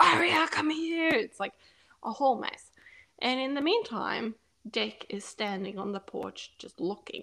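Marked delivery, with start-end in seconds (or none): 0.0-1.1 scared, high, loud screaming. Retelling a friend calling the dog: imitating someone screaming. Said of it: "she's screaming her name".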